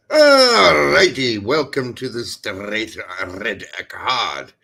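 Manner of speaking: put-on Scottish accent. Podcast host opens the show, put-on Scottish accent. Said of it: "by giving a Scottish accent".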